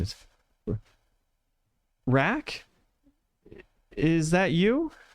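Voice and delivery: baffled, bewildered, very confused, high and swooping pitch. In a role-play story, a sobbing child stops and speaks in a very confused voice. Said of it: "in a very confused voice".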